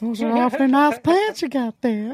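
put-on old man voice, pitched very high. Joining in on the old man from Family Guy: old guy from Family Guy voice. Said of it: "he's like that old guy in Family Guy".

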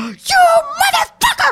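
very high, shrill screaming. Retelling screaming at a woman who pulled the speaker out of a car. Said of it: "I'm like screaming at her".

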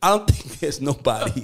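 speech broken by laughter. Talking about a former label boss who lost everything: laughing while talking. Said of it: "I don't mean to laugh".

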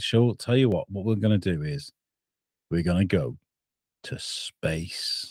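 put-on low, relaxed, laid-back Lancashire accent near Manchester. Imagining a Lancashire company announcing its plans, in a laid-back Lancashire accent. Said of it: "they talk like that, you know, from near Manchester".

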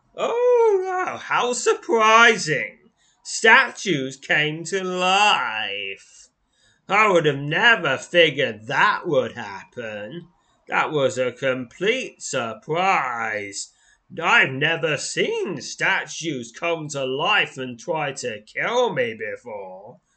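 loud, swooping sarcastic astonishment, stretching "life". Player reacting to a game event: sarcastic. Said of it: "I was being sarcastic".

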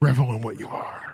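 put-on eerie, unsettling, creepy voice. Saying a requested line in a creepy voice. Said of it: "Say it".

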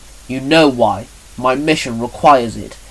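ordinary delivery

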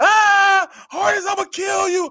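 very high, very slow, stretched drawn-out scream. Retelling how a player screamed at the line of scrimmage, imitating a scream. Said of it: "he's screaming".

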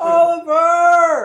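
put-on very high, drawn-out little-girl yell. A little girl calls out near the ocean, little girl yelling. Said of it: "That sounds like a little girl".

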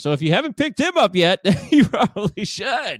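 joking, tongue-in-cheek. Giving fantasy baseball advice to listeners, facetious. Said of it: "That's being facetious".

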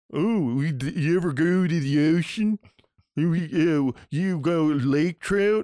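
slow, jeering, mocking Baltimore accent, stumbling. Imitating how people talk once the camera is on them: mocking Baltimore accent. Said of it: "That's a guy doing a voice".

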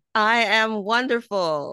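bright smiling voice. Repeating a daily affirmation after the speaker, with a smile in her voice. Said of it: "Donna had that smile in her voice".

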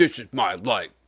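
deadpan, straight-laced, dead-serious jock voice. Describing an actor's usual straight-faced jock roles: straight-faced jock impression. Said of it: "your imitation of a jock".

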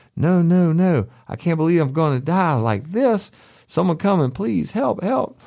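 high, shrill, desperate, panicked screaming. Retelling banging on the door for help, retelling screaming bloody murder. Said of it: "I just started screaming bloody murder".

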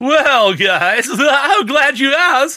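very high, nerdy know-it-all rabbit voice. Co-hosts wonder when a movie won Best Picture; one answers in a research rabbit voice. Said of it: "The voice of the research rabbit?".

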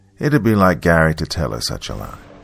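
ordinary delivery

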